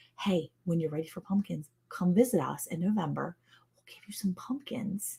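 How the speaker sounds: hushed whisper. Addressing listeners during a chat about pumpkin pickles: whispering. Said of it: "Why are you whispering?".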